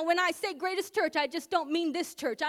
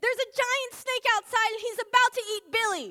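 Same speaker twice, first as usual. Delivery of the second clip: put-on high, frantic, urgent cry in a child's voice; 5 semitones higher than usual. Giving an example of a child running into the house, imitating frantic screaming. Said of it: "frantically screaming".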